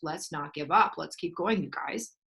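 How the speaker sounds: normal talking voice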